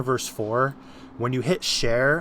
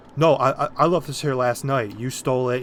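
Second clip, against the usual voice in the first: ordinary talk, nothing marked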